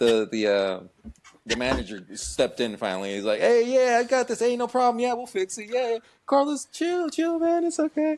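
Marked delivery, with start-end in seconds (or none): 3.4-8.2 mock loudmouthed voice, very loud and very high. Retelling how the manager stepped in: imitating a loud, loudmouthed manager. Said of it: "kinda loud, loudmouthed".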